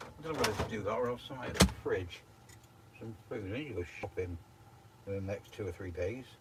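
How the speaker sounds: very soft, quiet muttering under the breath. Speaker thinking aloud about food and shopping, mumbling. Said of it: "sorry, I'm mumbling".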